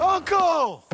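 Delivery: calling out, projecting the voice.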